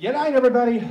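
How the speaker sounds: very loud, high-pitched, big bellowed yell. Asking a question about a cartoon catchphrase: imitating Yakko yelling. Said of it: "Yakko, like, uh, yells".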